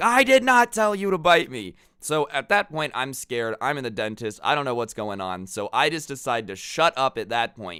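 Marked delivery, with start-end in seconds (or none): 0.0-1.7 furious, loud, high angry yell. Speaker retells the dentist yelling at them during a cleaning: retelling the dentist's yell. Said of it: "And he yells at me".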